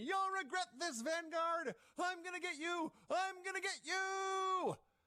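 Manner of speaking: very high, slow, drawn-out shrieking scream. Retelling a video's final moments: imitating Jericho screaming. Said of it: "Jericho is screaming".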